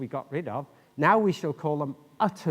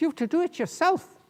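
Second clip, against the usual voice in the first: attempted Irish accent, put-on, pitched very high; 13 semitones higher than usual. Telling a story about students, quoting another student's reply in an attempted Irish accent. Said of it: "I'll try and do it in an Irish accent".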